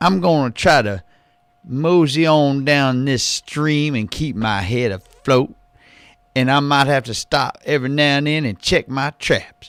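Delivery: put-on Louisiana paper boy accent. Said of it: "a jerked out paper boy from Louisiana".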